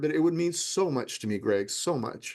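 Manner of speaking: teary, slow, tearful delivery. Telling greg how much helping people would mean, getting teary. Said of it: "I'm sorry I'm getting a little teary here".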